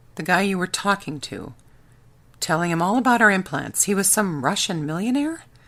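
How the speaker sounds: plain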